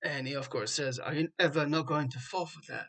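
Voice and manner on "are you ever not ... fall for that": put-on trying a British accent. Retelling the scene where Loki escapes his prison, Loki in a British accent. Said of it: "a good attempt at a British accent".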